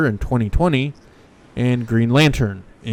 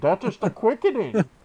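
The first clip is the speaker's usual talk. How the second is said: muffled put-on voice, higher and quieter; 10 semitones higher, 6 dB quieter than usual. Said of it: "Sean Connery with the Solo cup over your mouth".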